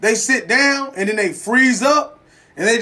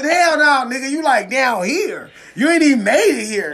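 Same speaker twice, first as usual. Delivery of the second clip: curt, dismissive tone; 3 semitones higher than usual. Imitating how a new friend will react: imitating Mac T's voice. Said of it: "Her voice".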